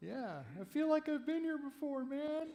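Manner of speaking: very high-pitched fake drunk voice. A speaker addressing listeners slips into a put-on drunk voice. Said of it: "That's that's my drunk voice".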